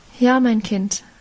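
ordinary delivery, nothing marked

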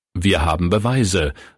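plain

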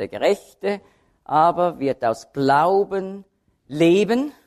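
stress on Gerechte, Glauben and leben.

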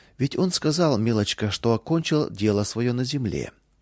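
ordinary delivery

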